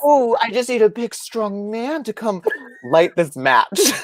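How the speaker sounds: very high, slow, put-on little baby voice. Speaker mocking another speaker's helpless act, in a little baby voice. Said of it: "her little baby voice character".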